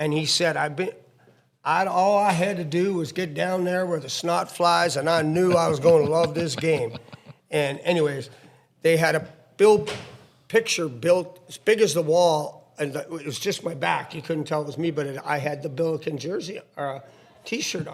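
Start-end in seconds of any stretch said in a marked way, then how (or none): 0.5-6.9 put-on speech with Arkansas accent. Retelling what a coach said at his first hockey game: imitating Charlie Spoonhour's Arkansas accent. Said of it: "talked like this".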